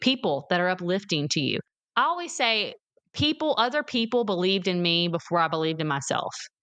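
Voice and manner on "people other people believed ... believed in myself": usual speaking voice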